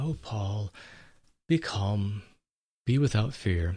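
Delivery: peaceful quiet voice. Speaker imagines how the angel might have spoken to paul: peaceful, quiet voice. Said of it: "in a peaceful, quiet voice".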